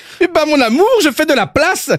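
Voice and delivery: put-on high-pitched Belgian accent. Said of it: "il est pas mal, mon accent belge".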